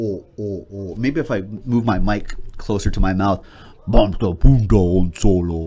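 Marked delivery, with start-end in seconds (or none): 3.9-5.7 deep, guttural, louder gurgling alien growl. Demonstrating a character impression to the audience, after fiddling with the mic to get it right. deep gurgling alien voice. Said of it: "That's my Jabba the Hutt impression".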